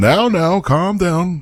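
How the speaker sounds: lofty, stately, regal voice, very high and slow. Voicing a figure on deck calming a cheering crew: regal voice. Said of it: "a regal voice saying".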